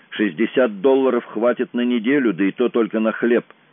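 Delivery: plain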